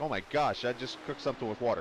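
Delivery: ordinary talk, nothing marked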